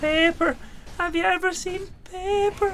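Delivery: odd, very high, slow drawn-out funny delivery. Recalling a funny line, imitating how he says paper. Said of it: "the way he says".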